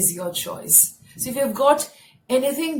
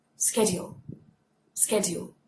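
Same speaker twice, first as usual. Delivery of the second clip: soft American accent on the word schedule; 3 semitones lower, 6 dB quieter than usual. Demonstrating the word schedule in british then american accent, american accent. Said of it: "American accent".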